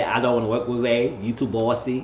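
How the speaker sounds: plain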